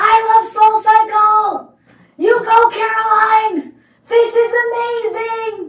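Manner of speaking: very high, shrill, very loud wild screaming. In a spin class, the speaker quotes a fellow rider, imitating Scott screaming. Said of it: "starts screaming".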